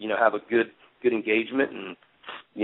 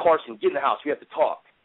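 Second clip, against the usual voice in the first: put-on pissed-off, stern voice; 4 semitones higher than usual. Retelling how he pretended to be angry to call her inside: imitating his own fake angry tone. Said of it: "I acted like I was pissed off at her".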